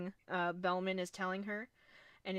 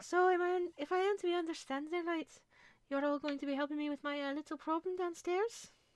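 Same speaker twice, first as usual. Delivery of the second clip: put-on, high Irish woman's brogue; 9 semitones higher than usual. Voicing a woman character speaking to the group, high Irish accent. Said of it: "high Irish".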